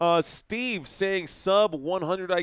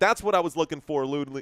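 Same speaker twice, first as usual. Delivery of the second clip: plain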